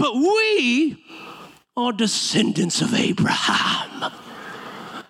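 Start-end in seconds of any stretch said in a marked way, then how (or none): 0.0-4.0 put-on pretentious slow British accent, drawn-out "we". Quoting the Pharisees from scripture: put-on British accent. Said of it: "I give them a British accent".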